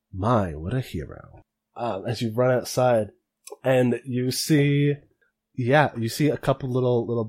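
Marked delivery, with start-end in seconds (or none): 0.1-1.4 dry, drawn-out, put-on character voice. Voicing Gallo remarking as a player runs outside: dry Gallo voice. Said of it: "Gallo dryly say".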